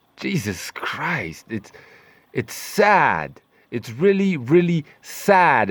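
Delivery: slow, aggravated, exasperated tone with a rising tune. Complaining about a gold seller dodging the question: aggravated tone. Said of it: "as you can tell by the tone of my voice".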